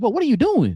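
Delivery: loud hollering. Retelling a reaction to a play with thirteen seconds left: imitating yelling at the tv. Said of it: "I remember yelling at the T V like".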